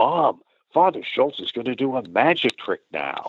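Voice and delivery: put-on little girl's high stage whisper, meant to carry. Retelling a little girl's remark to her mother: imitating a stage whisper. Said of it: "saying to her mother in a stage whisper".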